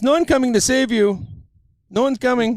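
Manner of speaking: very high, fake put-on Cuban accent. Retelling what a man told him during bench press, in a fake cuban voice. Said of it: "In his fake Cuban voice".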